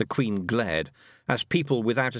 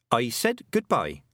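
ordinary delivery, nothing marked

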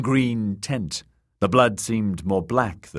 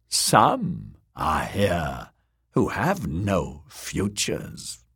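terrible deep, low muttering; 3 semitones lower than usual. Narrating the fortune-teller answering the girls who demand a foretelling, muttered in terrible deep voice. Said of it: "muttered in her terrible deep voice".

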